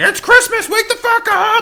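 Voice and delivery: acted-out screaming yell. Uncle recalling waking the kids on christmas morning, retelling a scream. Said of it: "I'm like screaming at them".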